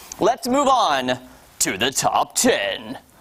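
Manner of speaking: slow, showy put-on announcer voice. Moving from the runners-up to the top ten, in a put-on announcer voice. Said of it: "That was my announcer voice".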